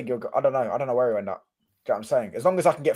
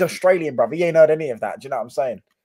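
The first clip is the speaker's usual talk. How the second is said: plain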